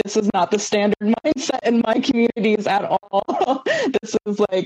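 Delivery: laughing through the words. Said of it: "And I'm like".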